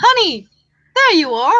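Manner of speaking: high-pitched, swooping frog character voice. Voicing a frog greeting Ava: frog character voice. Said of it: "looks up at Ava and goes".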